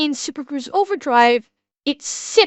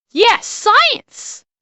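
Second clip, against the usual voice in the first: emphatic, authoritative voice, pitched high; 8 semitones higher, 3 dB louder than usual. Showing a co-host how the line should be said, as a Jesse Pinkman exclamation. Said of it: "You gotta say it with authority. ... Gotta get some Jesse Pinkman on there".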